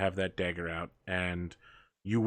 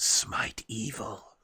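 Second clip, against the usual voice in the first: close, intimate, breathy whisper. Acting out whispering in a stabbed enemy's ear: whispering. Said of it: "you just whisper in his ear".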